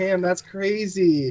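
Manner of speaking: sarcastic, insincere, dismissive. Showing the reply they give just to get people to stop talking, sarcastic. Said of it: "the sarcastic bullshit".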